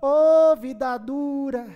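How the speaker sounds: mournful, groaning lament. Retelling what a woman said during preaching: imitating a church lady's lament. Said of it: "ela falava assim".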